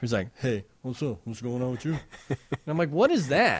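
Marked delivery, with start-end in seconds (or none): 0.4-2.0 soft, odd, weird mumbling voice. Imitating a man who drops into a weird mumble: imitating a weird mumble. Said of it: "he drops into this weird kind of mumble".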